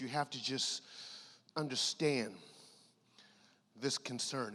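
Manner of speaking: hushed, dropped voice. Speaker sharing a concern every NFL player has, in a lowered voice. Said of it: "as I lower my voice".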